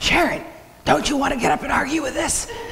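soft, high whispered aside. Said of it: "he whispers to me".

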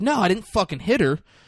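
high, defensive, protesting tone. Retelling a scene where another character accuses him, Johnny Truelove, mock-defensive. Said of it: "And he's like all defensive".

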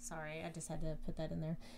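ordinary talk, nothing marked

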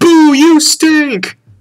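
loud, shrill, very high jeering boo. Acting out heckling a graduation speaker: acting out a loud heckle. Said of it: "you just loudly say".

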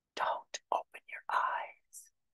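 hushed, breathy, soft whisper close to ear. Retelling what a figure beside the bed said into the ear: imitating a whisper. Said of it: "she leans down into my ear and she whispers".

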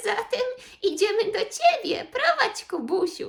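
high, calling-out voice. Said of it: "zawołał prosiaczek".

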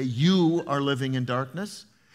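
ordinary delivery

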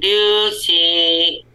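very high, squeaky upper-register call. Recalling speaking under a mask in a very high upper register. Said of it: "I remember speaking really high in my upper register, like".

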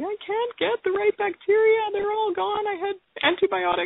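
high, panicky, pleading voice. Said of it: "kind of panicking and going".

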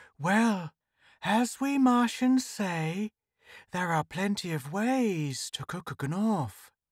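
foxy, grinning sneer. Reading a story, the narrator voices Goreck answering a threat to his ship, sneering. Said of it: "He displayed quite a paternal solicitude whenever he looked at [name], but he sneered openly at the yelling crowd. / Like most Martians, he was tall and spindle-legged, large-chested, big-nosed, and e".

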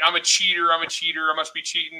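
ordinary talk

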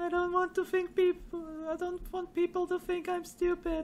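embarrassed high voice.

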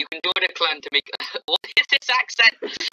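ordinary delivery

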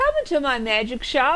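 pleasant, friendly voice. A talking head welcomes the narrator into its magic shop, pleasant. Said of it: "the head says pleasantly".

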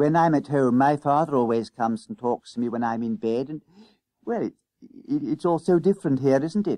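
plain reading voice

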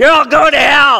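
thundering, yelling fire-and-brimstone preacher voice. Showing a fire and brimstone sermon: fire and brimstone yelling. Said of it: "I've always wanted to do a fire and brimstone one".

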